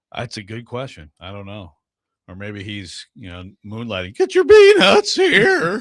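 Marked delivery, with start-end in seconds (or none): 4.2-5.9 very high, loud, slow, drawn-out vendor-style holler. Joking that James Gladstone moonlights as a ballpark vendor: James Gladstone voice. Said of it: "James Gladstone voice".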